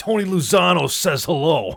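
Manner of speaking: loud, high-pitched New Jersey accent. Trying out a hitman line, in a put-on Jersey mobster accent. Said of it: "in a Jersey accent".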